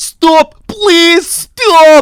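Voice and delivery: very high, loud screaming.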